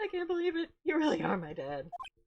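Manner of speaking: put-on fake crying. Joking about a game character meeting the old man: mock crying as Phoenix. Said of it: "Phoenix just starts crying".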